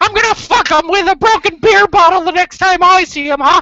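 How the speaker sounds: very high, loud cartoon mouse voice. Quoting a South Park episode, in a Mickey Mouse voice. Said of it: "I'm Mickey Mouse".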